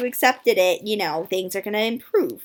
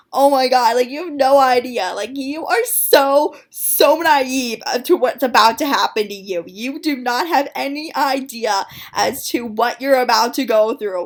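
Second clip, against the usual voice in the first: imitated hysterical laughing talk, higher and louder; 3 semitones higher, 5 dB louder than usual. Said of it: "laughing, like, in a hysterical way".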